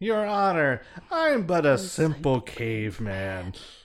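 animated, lively delivery with pitch swooping all over. Quoting a sketch character just named by the others: Unfrozen Caveman Lawyer impression. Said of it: "Unfrozen caveman lawyer".

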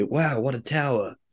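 really bad, butchered American accent. Joking about a game version where a movie character says a line, bad american accent. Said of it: "In his really like bad American accent".

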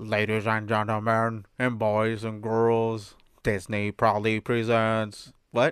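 synthesized robot voice. Urging another speaker to imitate the Main Street Electrical Parade opening; Main Street Electrical Parade robot voice. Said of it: "say it like a robot".

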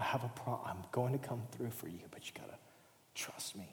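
quiet, low whispering.

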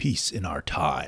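low quiet robot voice. Redoing a movie quote after calling the first try too nerdy: Ultron voice. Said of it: "There you go".

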